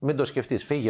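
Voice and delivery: ordinary talk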